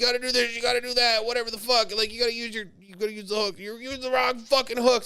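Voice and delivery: mock irritated, shrill, bossy yelling. Retelling a woman yelling instructions at the speaker, imitating someone yelling. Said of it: "she's fucking yelling about it".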